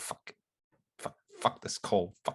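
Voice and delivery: low, grumbling muttering under the breath. Voicing a character failing to light a cigarette in cold wind: muttering under his breath. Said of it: "Just muttering under his breath".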